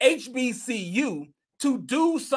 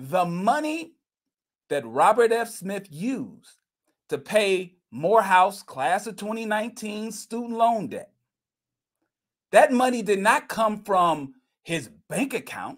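slower, deliberate, each part drawn out a little; 3 semitones lower than usual. Repeating a point so listeners understand, saying it a little slower. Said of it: "let me say that a little slower".

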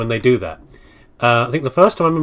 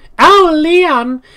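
very high, shrill, loud, helpless-sounding call; 5 dB louder than usual. Recalling the president's daughter from Resident Evil 4, the speaker does an Ashley impression. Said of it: "That's my impression of Ashley".

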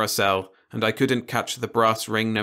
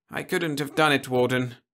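half-asleep, drowsy, sleepy mumbled words; 4 semitones higher than usual. A narrator voices a sedated, injured man answering the Warden, in a drowsy mumble. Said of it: "Horbit mumbled drowsily".

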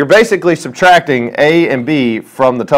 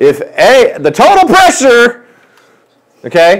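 full-on yelling, high-pitched and shouted; 9 semitones higher than usual. Explaining a gas pressure problem to a class: shouting. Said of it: "Why are you screaming?".

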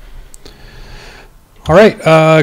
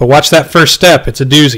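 usual speaking voice

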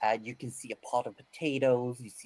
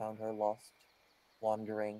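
normal talking voice

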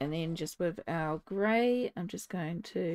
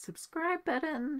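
cracking voice, pitched up; 9 semitones higher than usual. Closing a video, asking viewers to subscribe, voice cracking. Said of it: "that was like a teenage voice break there".

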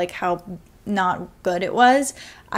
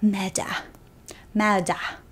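mocking, odd, fake-British pronunciation of 'murder'; 4 dB quieter than usual. Speaker mimics a woman's pronunciation from the book: imitating odd British 'murder'. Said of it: "The way that she says murder".

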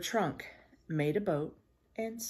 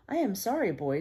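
usual speaking voice

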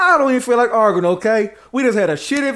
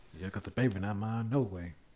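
muttering, lower and quieter; 13 semitones lower, 18 dB quieter than usual. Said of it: "I heard you mumble something".

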